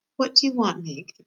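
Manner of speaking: soft, quiet voice. The princess asks meg, who is sobbing, softly. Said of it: "The princess said softly".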